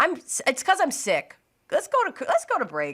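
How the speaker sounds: on the verge of tears. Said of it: "Yes, shh".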